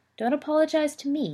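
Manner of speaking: kind, soft reassuring voice. An uncle answers his nephew's apology, kindly. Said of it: "Alphard said kindly".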